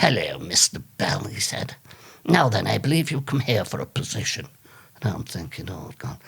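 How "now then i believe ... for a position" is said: put-on old-fashioned old man voice. Retelling an old man interviewing him for a position, Dickensian old man voice. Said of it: "it was like something off Dickens".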